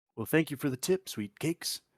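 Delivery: coaxing, honeyed, flirty, sweet-talking charm. In character, sweet-talking a gnoll shopkeeper into lowering the price: sweet-talking. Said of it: "so how do you sweet talk this gnoll?".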